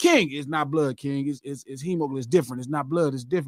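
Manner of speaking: low, soft, mock-patient voice.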